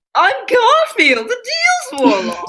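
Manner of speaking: screaming, shrill, high cartoon cat voice, wildly swooping. A player introducing the character Garfield the Deals Warlock: screaming Garfield voice. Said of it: "need to stop screaming".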